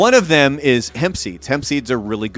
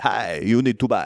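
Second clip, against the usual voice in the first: hushed, soft radio-ad announcer voice, vampire style; 3 semitones lower, 5 dB quieter than usual. Doing a commercial line in his radio voice, slipping into a Dracula voice. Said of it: "I don't know why I became Dracula".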